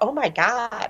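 play-acted, sudden bursting blurted exclamation. Retelling a customer bursting out at orientation: imitating a sudden outburst. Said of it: "bursts out".

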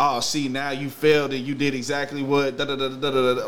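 plain

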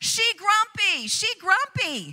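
booming, loud, slow announcing voice. Retelling how he announced it to the entire store, retelling a loud announcement. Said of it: "in a loud voice, announcing it to the entire store".

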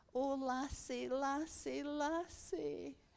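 put-on Highland accent. Retelling what an old lady said to her, in a Highland accent. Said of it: "in her lovely, lovely Highland accent".

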